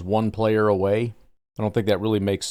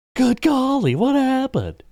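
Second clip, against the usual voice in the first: very high exclamation with wildly swooping pitch; 3 dB louder than usual. Acting out fans confused by the Packers' cap space: Will Ferrell's Harry Caray impression. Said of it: "Will Ferrell's impression of, uh, Harry Carey".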